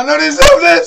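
high, loud, anguished, desperate wail.

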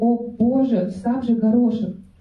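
ordinary delivery

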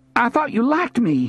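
blurting it out. After she pokes him with her boot, he calls back to her, blurting it out. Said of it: "he blurted out".

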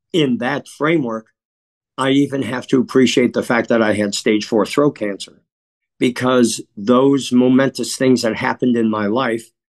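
plain

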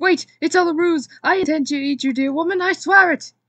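very loud, high, frantic, panicked crying out. Bernard calls after Rita as she turns to leave, panicked cry. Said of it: "he cried".

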